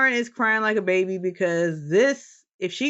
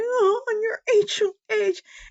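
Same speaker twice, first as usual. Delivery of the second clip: mock sobbing voice, very high and very slow. Retelling how Lauren cried in the bathroom: imitating Lauren crying. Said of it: "Lauren was crying in the bathroom".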